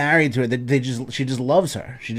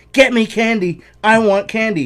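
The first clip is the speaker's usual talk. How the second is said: put-on very high, loud, insistent toddler screaming; 10 semitones higher, 7 dB louder than usual. Telling how a 3-year-old screamed at him for candy, imitating Juliana screaming. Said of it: "Just screams at me".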